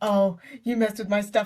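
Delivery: mock tough bad-boy voice. Mocking mafia characters on a show trying to be bad boys: imitating a tough bad-boy voice. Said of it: "trying to be, like, the bad boys".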